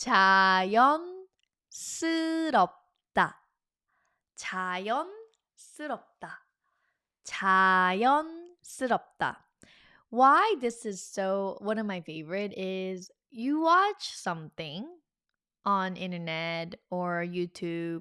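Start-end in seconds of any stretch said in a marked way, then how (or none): 0.0-9.4 much slower, careful, deliberate pronunciation. Teaching a five-syllable Korean word to learners, say it slowly. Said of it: "so I'll t- say it slowly".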